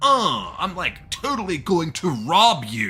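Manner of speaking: loud, high, slow, lazy, drawn-out cartoon crook voice. Reacting to a racer's voice in the game: Snake from The Simpsons voice. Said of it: "Snake from The Simpsons".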